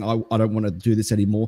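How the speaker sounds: normal talking voice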